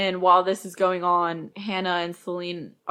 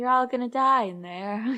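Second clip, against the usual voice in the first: acted, pitched-up, blurting stoned delivery; 5 semitones higher than usual. Quoting a character who is super high: imitating someone super high. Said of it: "super high and saying everything that comes to mind".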